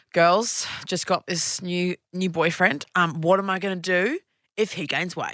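ordinary talk

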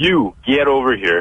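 slow, drawn-out, mild called-out yell. Retelling how officers yelled at the speaker and friends, retelling officers' yell. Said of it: "they're yelling at us".

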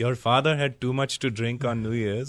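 put-on mimicked Indian accent. Retelling what his mom said about his birth: imitating his mom's indian accent. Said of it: "It sounds sexier with the accent".

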